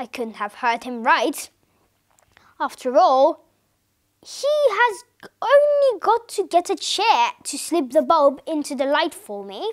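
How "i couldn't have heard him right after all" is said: plain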